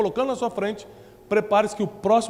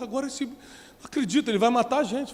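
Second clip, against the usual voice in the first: mock tearful, terrified, weeping outburst; 2 semitones higher than usual. Retelling the brothers' reply in a Bible story: acting out terrified crying. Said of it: "começam a chorar, aterrorizados, falam assim".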